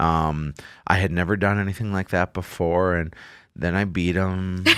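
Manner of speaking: calm, even put-on voice.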